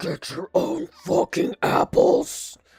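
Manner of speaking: roaring demonic voice, very loud. Planning another version of a track, the speaker tries out a demonic voice. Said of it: "demonic voice of like".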